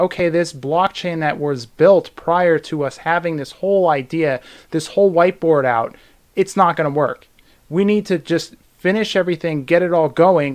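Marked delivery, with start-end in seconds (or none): none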